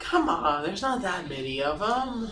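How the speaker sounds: slow, hushed, urgent half-whisper under the breath. Urging the other players on in the game, half-whispering. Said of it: "I'm gonna whisper and be like".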